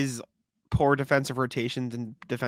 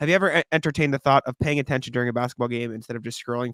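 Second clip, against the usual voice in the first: plain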